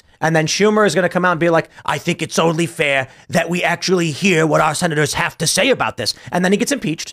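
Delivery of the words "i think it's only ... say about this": put-on New York accent. Imagining what Schumer will come out and say, in a Schumer New York accent. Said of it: "that was a New York accent".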